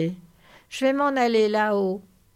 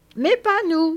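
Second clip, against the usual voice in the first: happy cry, much higher and louder; 9 semitones higher, 5 dB louder than usual. Interrupting his companion: crying out happily. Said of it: "s'écria Lenny tout heureux".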